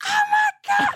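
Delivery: mock excited screaming. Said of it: "screaming by myself in my car".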